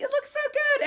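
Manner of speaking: mock very high, strained, forced through clenched teeth. Retelling the hiring team's reaction to the dancing, said through gritted teeth. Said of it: "don't say that through gritted teeth".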